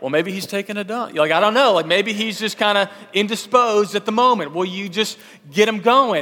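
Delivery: joking, needling, razzing tone. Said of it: "razzing him during this time".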